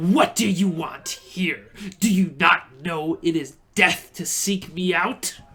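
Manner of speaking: vicious, hateful snarling spectral elf voice. A narrator voices a ghostly female elf confronting intruders, snarling. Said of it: "she snarls".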